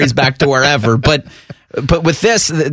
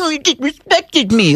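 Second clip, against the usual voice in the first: put-on very high, whiny crybaby baby voice; 12 semitones higher than usual. Mocking a coach upset at a handshake snub: mock whiny baby voice. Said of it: "Don't be a baby".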